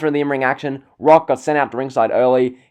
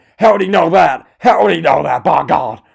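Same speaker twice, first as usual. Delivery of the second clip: fired-up, loud, rough play-by-play announcer shouting; 4 semitones higher, 5 dB louder than usual. Recalling a match where JR was on fire: shouting JR impression. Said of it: "He's just shouting, ... I can't do the J R voice flawlessly".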